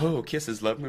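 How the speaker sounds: high, sweet, gushing voice. Retelling a scene-partner's phone riff: imitating Malcolm talking to his girlfriend. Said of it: "he's just going on and on".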